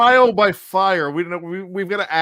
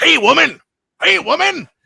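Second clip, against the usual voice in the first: rough, high-pitched, macho voice; 9 semitones higher, 4 dB louder than usual. Quoting a favorite line from Rocky III: Mister T as Clubber Lang voice. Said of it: "Mister T as Clubber Lang comes out and goes".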